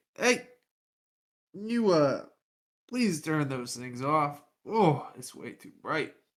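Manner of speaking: put-on sloppy, slurring drunken speech. Playing a character stumbling into torchlight: acting drunk. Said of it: "I'm gonna drunkenly kinda stumble over".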